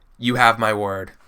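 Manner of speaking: brief, curt, terse delivery. A game master voices a character who gives the players his word: terse, short delivery. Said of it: "in a very like terse, short".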